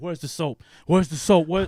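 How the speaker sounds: acted frantic panic, very loud yelling. Retelling searching for soap in the shower: imitating own past panic. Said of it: "And so I start panicking".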